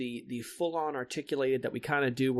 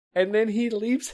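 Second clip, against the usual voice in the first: ordinary talk, nothing marked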